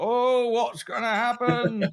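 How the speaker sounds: very slow, high, loud, dragged-out drawl. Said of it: "you do like an [name]".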